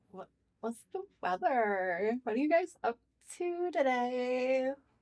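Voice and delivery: put-on high Valley Girl voice, stretching out "today". Performing a valley girl impression after being asked: valley girl impression. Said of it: "Do a Valley Girl impression".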